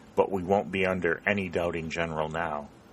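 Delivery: ordinary delivery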